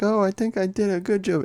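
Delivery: put-on very high, childlike little kid voice. Retelling what a little kid said over headphones, in a little kid voice. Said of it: "talking in a little kid voice".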